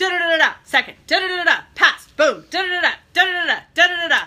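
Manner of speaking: mimicked rapid-fire speech. Retelling how the chair rushed through party business: imitating someone talking very fast. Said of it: "She's talking so fast".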